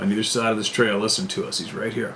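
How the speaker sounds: normal talking voice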